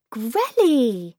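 eager, high-pitched, loud, excited little yelp. Lila greets Grelly as the giant door opens, yelping excitedly. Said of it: "Lila yelped excitedly".

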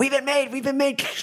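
very high, rushed, rattled-off alarmed shout. Voicing a character over an earpiece warning that they've been made: shouting in alarm.

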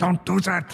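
panicked frantic shout. Voicing a character who panics and warns another player: panicked warning. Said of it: "he looks around, panicking".

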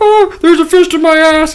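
very high, loud, shrill cartoon frog voice. Acting out a joke scene, saying the line as told in a Kermit the Frog voice. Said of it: "you're going to talk like Kermit".

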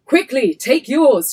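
high, very loud shouting. Reading a story aloud, the narrator gives another woman's line, shouting. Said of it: "she shouts".

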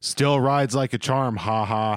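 acted flat, flippant, careless delivery with nothing behind it. Recalling a movie scene where Cody wakes up, imitating Marnie's flippant delivery. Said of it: "Just delivered so flippantly".

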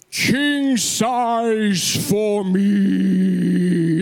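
play-acted, very slow, grand, drawn out, me stretched. Retelling what he bellowed after jumping from the moving car, retelling a bellow. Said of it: "he bellows this epic".

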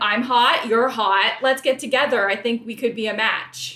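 matter-of-fact, businesslike, blunt, clinical delivery. Retelling a contestant's direct pitch to a match: imitating Carrie. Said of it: "she's like".

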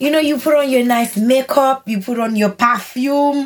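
put-on high voice, heavy Haitian accent. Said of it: "in her very heavy Haitian accent was like".

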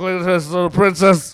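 put-on drunk speech. Retelling a drunk friend talking to children: imitating a drunk friend. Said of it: "he's fucking drunk".

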